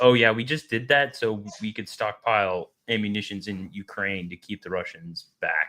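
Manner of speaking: plain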